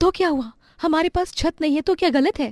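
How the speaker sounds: upset, angry, snapped high and hurt. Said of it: "अरे, नाराज क्यों हो रहे हैं".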